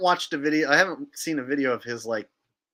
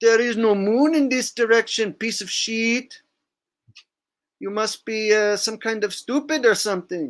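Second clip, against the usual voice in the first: put-on Dutch man voice, pitched up; 8 semitones higher than usual. Doing an impression of Q, a Dutch man from Amsterdam: Q voice impression. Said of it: "trying to do his voice there".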